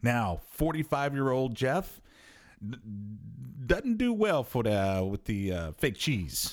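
casual talk in a Louisiana accent. A host talks to listeners, in a Louisiana accent. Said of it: "I don't know why I'm doing a Louisiana accent".

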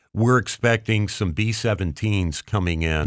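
normal talking voice

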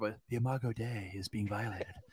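very quiet, hushed, mocking nerdy public-radio voice. A speaker redoes his own phrase, mocking it in an NPR voice. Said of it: "it should be NPR".

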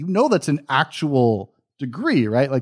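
mock pedantic know-it-all lecture, high, wide pitch swings.

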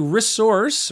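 resource with stress on the wrong syllable. A podcast host introduces today's resource; wrong-syllable stress on 'resource'. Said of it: "Put the emphasis on the wrong syllable".

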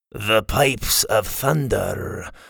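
rough, gravelly voice with very slow delivery. A narrator reads a scruffy fisherman's remark to Scotty and the others, gravelly voice. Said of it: "came a gravelly voice".

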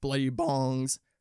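voice cracking. Repeating a phrase for its alliteration: voice cracking. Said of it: "you hear that voice crack?".

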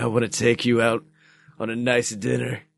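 very deep, suggestive, seductive bedroom voice. Quoting an actor's line in a film: put-on deep sexual voice. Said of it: "he's got that very deep sexual voice".

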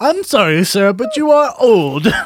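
high, loud, shrill, clipped put-on English accent. Imagining what the English DMV told a very old driver, put-on British accent. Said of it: "Spot on British accent".

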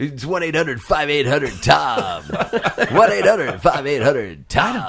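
morning radio DJ host voice. Joking with co-hosts about how the name Fire Nation sounds, morning radio show host voice. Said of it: "like a morning radio show host".

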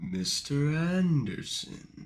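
quiet, hushed, soft, held-back voice. Talking with a co-host about a movie villain: Agent Smith impression. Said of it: "Is that your impression of".

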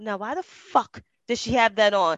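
put-on low, shady, gossipy old church lady voice. Speaker acts out church ladies judging someone who walks in: gossipy church lady voice. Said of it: "them ladies in church that be talking shit".

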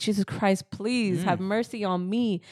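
put-on crying, slow, tearful pleading. Retelling a prayer said while starting to cry, imitating a crying plea. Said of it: "I started crying".

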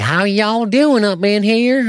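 put-on Southern accent. Mocking how most people fake a southern accent, in a put-on southern accent. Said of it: "when they do southern, they're like".

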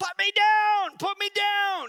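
put-on shrill, very high, very loud little-kid voice. A dad imitates his kid being spun around; two-year-old voice. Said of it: "in the best 2-year-old voice I can".

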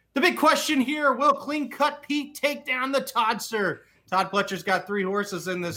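high horse-race announcer delivery. Previewing a horse race with another speaker, calling the matchup: channeling Slim's announcer voice. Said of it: "channeling my inner slim with this announcer voice".

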